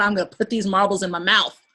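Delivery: acted angry outburst. Acting out a character who gets so mad at marbles: imitating an angry character. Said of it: "He gets so mad".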